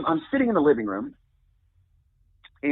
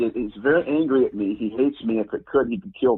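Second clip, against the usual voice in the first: ordinary delivery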